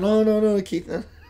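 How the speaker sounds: bashful, shy, modest and humble tone. Keith, thanking his sister, does his best impression of her: put-on shy, humble Anjana. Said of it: "I'm doing my best impression of my shy, humble sister Anjana".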